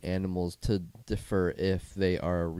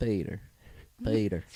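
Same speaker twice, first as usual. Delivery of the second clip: Southern accent, pronouncing extra r sounds. Explaining how Southerners say PETA, the speaker demos a Southern accent adding R's. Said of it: "you could be like Southern. How Southerners add R's to things".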